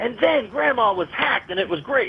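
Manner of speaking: put-on high, light, cheerful children's storybook narration. Mimicking how someone reads a bad story aloud: mock-cheerful storybook reading. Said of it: "He reads the book like it was a child's story".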